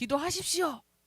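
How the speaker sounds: loud shouting voice.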